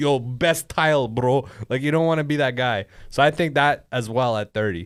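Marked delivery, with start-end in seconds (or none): 0.0-1.5 put-on speech carrying a Middle Eastern accent. Mocking a tradesman's sales pitch: imitating a Middle Eastern tradesman. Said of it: "name a trade that Middle Easterns do".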